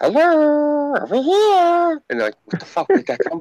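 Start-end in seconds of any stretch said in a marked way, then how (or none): 0.0-2.0 put-on cartoon character voice, very high. Describing what he does once people's backs are turned; cartoon character voice. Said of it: "start talking in that voice".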